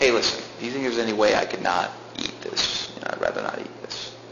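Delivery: meek, humble, hushed whisper. Speaker acts out a man asking his boss, acting out a meek request. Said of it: "with meekness and says".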